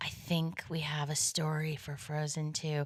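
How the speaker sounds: put-on sheepish tone. Recounting what she said when she called, in a put-on sheepish voice. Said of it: "this sheepish voice".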